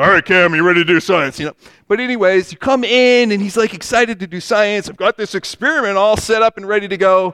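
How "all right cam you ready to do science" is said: put-on grumpy, grouchy, surly old man voice. Retelling a story, the speaker imitates Mr. Wizard as a surly old man. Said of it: "he was kind of like a surly old man".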